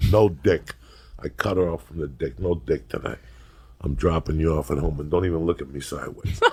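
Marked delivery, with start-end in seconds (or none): none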